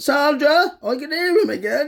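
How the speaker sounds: very high, very loud, slow, drawn-out complaining tone. Imitating a neighbour complaining about the noise: imitating a neighbour complaining. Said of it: "She'd be like".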